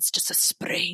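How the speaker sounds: breathy, seductive whisper. Quoting a film scene's actor line by line: seductive Timothy Dalton impression. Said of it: "if I may do a quote of Timmy's performance".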